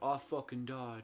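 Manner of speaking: attempted, put-on English accent. Imitating a movie character realizing he died: imitating a character in English accent. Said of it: "I don't know his English accent".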